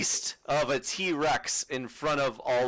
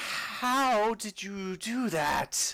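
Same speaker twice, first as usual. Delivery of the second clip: put-on tipsy, drunk-sounding, pitched-up spider voice; 8 semitones higher than usual. A character in the scene reacts, in a drunken voice. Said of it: "you hear this drunken voice".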